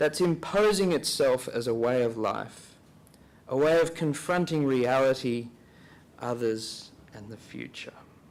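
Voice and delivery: slow, unhurried, reflective reading. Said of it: "I'll read this slowly".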